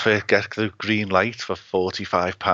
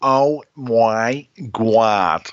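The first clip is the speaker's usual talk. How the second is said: loud, belted-out sitcom-style delivery; 2 semitones higher, 5 dB louder than usual. Showing how a TV character used to say her phrase: Janice from Friends voice. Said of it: "she used to say".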